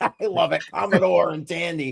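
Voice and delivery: talking through laughter. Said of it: "I'm laughing at this".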